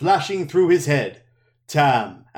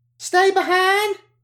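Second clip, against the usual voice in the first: very high-pitched exclaimed outcry. Egwene exclaims, repeating back the order to stay behind. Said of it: "Egwene exclaimed".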